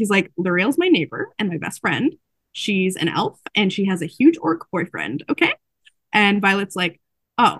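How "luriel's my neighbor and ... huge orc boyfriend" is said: plain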